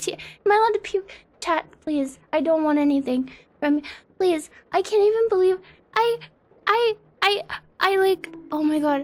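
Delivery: freaking out. A streamer pleads with chat, panicking. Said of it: "I need to calm down".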